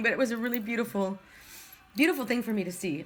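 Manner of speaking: tearful, speaking through tears. Moved by a story that turned out well, crying. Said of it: "I'm crying".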